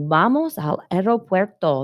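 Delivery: ordinary delivery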